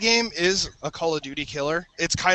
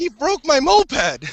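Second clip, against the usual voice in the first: loud, high, agitated worked-up outburst; 9 semitones higher, 7 dB louder than usual. Ribbing a longtime friend in front of others, in a worked-up outburst. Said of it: "you can calm down".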